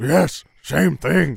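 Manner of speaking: high, raspy, rough dog-like voice. In a comedy scene, a park bench answers another character's question in a dog-like voice. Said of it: "Park bench had a dog sounding voice".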